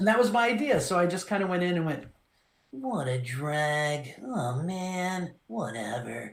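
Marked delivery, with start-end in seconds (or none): 2.7-6.3 quiet, lazy, very slow, raspy and drawn out. Retelling how the audition went: Shikamaru voice, quiet and lazy. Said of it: "that Shikamaru rasp is in there".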